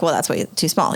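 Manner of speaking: ordinary talk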